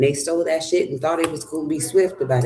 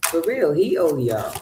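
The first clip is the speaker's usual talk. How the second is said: plain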